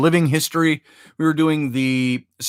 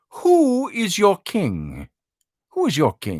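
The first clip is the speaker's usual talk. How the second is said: slow, swooping, put-on Scottish brogue; 3 semitones higher than usual. Retelling asking people in the lobby questions in character, in a Scottish brogue. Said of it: "so you're in a Scottish brogue".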